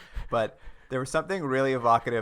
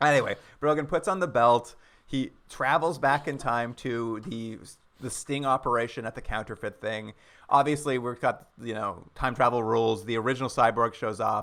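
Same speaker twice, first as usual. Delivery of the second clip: usual speaking voice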